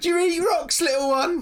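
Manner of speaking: put-on slurring drunken jeer. Voicing a very drunk twin pointing down at a short character: drunk mocking voice. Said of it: "clearly very drunk".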